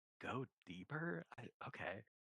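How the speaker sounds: slow, hushed half-whisper. Voicing a character who half-whispers to themselves after a player leaves: half-whispering to themselves. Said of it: "I think you do hear them whisper".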